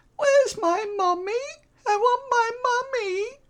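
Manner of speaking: put-on very high, frightened little girl voice. Voicing a pale little girl who looks up pleading: scared child voice. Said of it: "looks up at you with those, uh, big puppy dog eyes".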